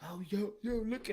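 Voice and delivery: soft, hushed half-whisper under the breath. Imitating people who half-whisper instead of speaking up: imitating someone half-whispering. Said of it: "don't be whispering like".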